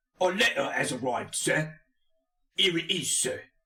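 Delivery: mock Cockney accent, high pitched. In an improvised scene, [name] answers Master Satoya: [name]'s bad Cockney accent. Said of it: "Maybe we'll go like Cockney".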